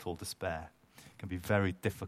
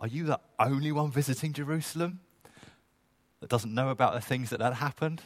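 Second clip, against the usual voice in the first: mock half-exasperated, irritated, raised and pitched up; 7 semitones higher, 6 dB louder than usual. Imagining the disciples' reply to Jesus: mock semi-irritated voice. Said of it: "in a semi-irritated voice".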